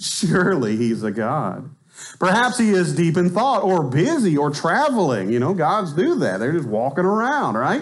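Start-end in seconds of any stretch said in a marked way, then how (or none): 0.0-5.3 heavy mocking sarcasm with sing-song swoops. Reading a taunt aloud, showing it should not be read flatly: sarcastic. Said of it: "You've got to read the sarcasm in this".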